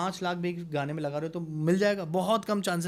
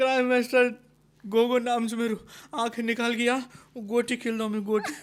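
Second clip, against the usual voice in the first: fake crying while speaking, much louder; 6 semitones higher, 4 dB louder than usual. Speaker challenged to say a line while crying, fake crying while speaking. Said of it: "ये रोते हुए बोलना आपको।".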